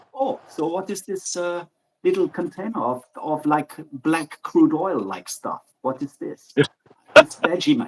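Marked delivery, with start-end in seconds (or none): 0.2-6.6 put-on German accent, strong and clearly marked. Retelling what Michael said to someone, imitating Michael's German accent. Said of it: "clearly accented Germanic voice".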